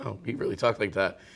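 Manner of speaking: usual speaking voice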